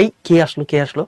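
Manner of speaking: ordinary talk, nothing marked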